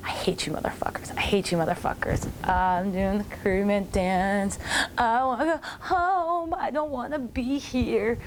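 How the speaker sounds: mock muttering under breath. Recounting being pulled into a dance-off, retelling a mumble under breath. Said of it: "I'm mumbling under my breath".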